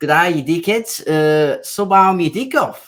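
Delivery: put-on Australian accent. Speaker trying on an Australian accent while others judge it. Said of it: "better than his South African accent".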